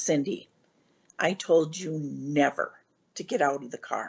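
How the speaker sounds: acted firm, stern tone. Retelling grandfather's scolding for leaving the car: imitating a stern grandfather. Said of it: "he was stern".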